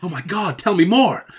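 fake American accent, high and loud. Answering the other speaker in a joke exchange about butter: put-on American accent. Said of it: "I don't know why we did that in an American accent".

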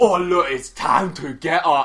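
put-on heavy, thick London accent. A tabletop player, asked what they'll say to him, speaks in character, in a strong london accent. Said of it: "she's got the most London accent of all time".

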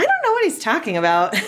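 squeaky, very high little character voice. Reading the book Be Quiet aloud, voicing another character, squeakier character voice. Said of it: "a little squeakier as well".

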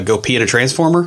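ordinary delivery

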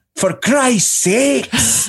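sudden, very high, shrill yell. Telling how a dad opened the washroom door on them, retelling a yell. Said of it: "He yelled".

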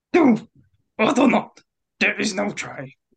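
high, slow, deliberate. Asked by others to do an impression of the most iconic Yoda quote: Yoda impression. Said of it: "your Yoda impression for his most iconic one".

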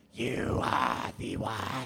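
rasping, creaky, croaking witch voice, as if possessed. Speaker describes a friend's put-on voice and demonstrates it: Dune witch voice. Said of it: "like the Dune witches when they're like".

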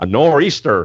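put-on American accent. Asked by a co-host to say a word again, in a put-on American accent. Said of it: "I want you to say it in an American accent now".

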